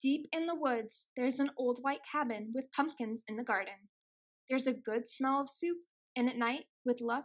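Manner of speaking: plain reading voice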